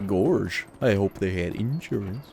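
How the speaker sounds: fumbling attempt at a cartoon dog voice. After calling your last try your worst ever, repeat the line in a Groomer Goofy voice. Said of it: "That sounds like Groomer Goofy".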